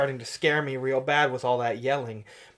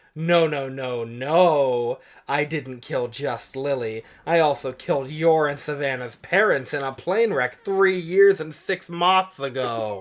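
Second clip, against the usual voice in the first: ordinary talk, nothing marked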